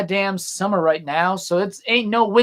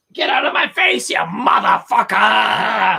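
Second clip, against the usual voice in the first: slow, drawn-out, rough and creaky voice. Trading quotes from a viral video: Crazy Meijer Lady impression. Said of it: "quote, uh, Crazy Meyer Lady all day".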